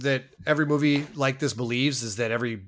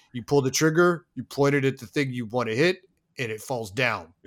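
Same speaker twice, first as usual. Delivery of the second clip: imitated condescending tone. Retelling a character's shotgun instructions, imitating condescending instructions. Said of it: "the most condescending shotgun instructions".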